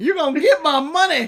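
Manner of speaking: high, really upset, worked-up outburst. Acting out the man in the middle who looks like a pimp, imitating someone really upset. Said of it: "He's really upset!".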